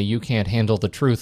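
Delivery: ordinary delivery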